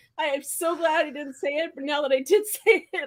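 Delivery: talking through laughter. Admitting a near slip of the tongue: laughing while talking. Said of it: "I'm laughing".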